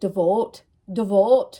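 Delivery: odd accent, maybe Scottish. Repeating a word said oddly a moment ago, weird accent, maybe Scottish. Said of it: "like with an accent. ... is that Scottish?".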